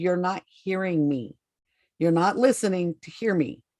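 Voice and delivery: very stern, firm parental voice. A mom retells what she said to someone, in a very stern voice. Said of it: "And in a very stern voice".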